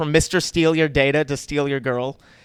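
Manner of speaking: ordinary talk, nothing marked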